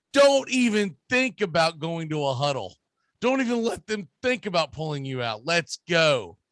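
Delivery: normal talking voice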